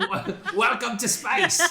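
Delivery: fake Australian accent, loud and slow.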